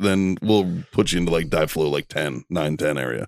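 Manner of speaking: ordinary talk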